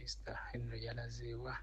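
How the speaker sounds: soft, unvoiced whisper.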